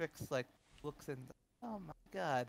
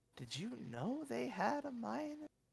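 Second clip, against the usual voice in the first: slow half-whisper, pitched very high; 11 semitones higher, 6 dB quieter than usual. Voicing a character who leans to another and asks: half-whispering. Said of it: "just whispers".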